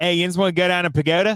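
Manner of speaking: local Pittsburgh accent. Other speaker says a word sounds great in a Pittsburgh accent; Pittsburgh accent. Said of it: "pagoda sounds amazing in a Pittsburgh accent".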